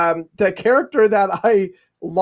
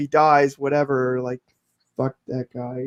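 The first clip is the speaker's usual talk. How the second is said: put-on muttering under the breath, lower, quieter; 6 semitones lower, 5 dB quieter than usual. Imitating a character talking about his brother: the Hound muttering under his breath. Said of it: "kinda talking, like, under his, under his breath".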